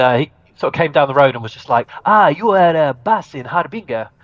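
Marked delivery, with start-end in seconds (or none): 2.1-4.1 put-on slow, high Spanish accent. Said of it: "that was Spanish accent".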